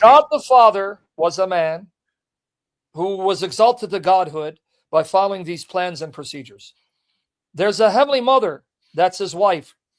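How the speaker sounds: serious, clinical, dead-straight, straight-faced delivery. Having announced they'll say it clinically, the speaker reads it: serious, straight-faced. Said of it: "I'm going to say it very seriously".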